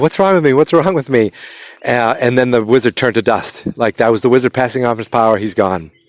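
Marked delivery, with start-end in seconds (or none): 0.0-1.3 frantic, alarmed, panicked outburst. Retelling a movie scene where the hero panics: imitating someone freaking out. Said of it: "he starts freaking out".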